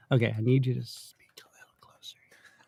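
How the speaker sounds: soft, fast whispered aside.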